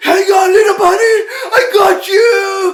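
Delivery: shrill, booming, drawn-out, very high dramatic yell. Retelling a movie scene with a falling raccoon: imitating Jim Carrey yelling dramatically. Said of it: "yelling dramatically".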